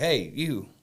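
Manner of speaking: casual, hollering call-out voice. Retelling a stranger calling from a van window: imitating someone hollering. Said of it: "she hollers at me".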